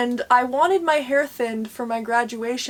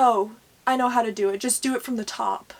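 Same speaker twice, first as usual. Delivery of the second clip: put-on smug, know-it-all voice. Retelling an answer given as a thirteen-year-old: imitating own know-it-all past self. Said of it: "being all smart".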